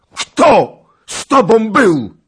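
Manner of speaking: shouting in a thundering, booming voice. A narrator reads a knight sitting up in bed, crying out, thundering shout. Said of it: "krzyknął grzmiącym głosem".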